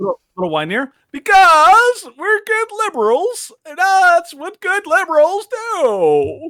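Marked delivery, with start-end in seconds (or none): 1.1-6.5 put-on very high, loud, drawn-out sing-song whiny old man voice. Continuing a satirical quote after being told to sound whinier: whinier old man voice. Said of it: "Needs to be a little whiner".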